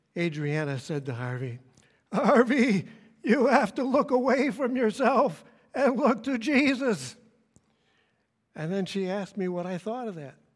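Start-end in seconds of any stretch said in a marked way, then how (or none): 2.1-7.1 very high, quaky, shaky, quavering voice. Speaker retelling what Adriana said to Harvey, imitating Adriana's shaky, quaky voice. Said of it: "in her shaky, quaky voice".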